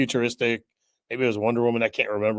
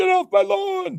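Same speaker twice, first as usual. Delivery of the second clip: put-on grumpy old man shout, higher and louder; 5 dB louder than usual. Joking about complaining over comic changes: mock old man yelling. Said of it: "me old man yelling at clouds".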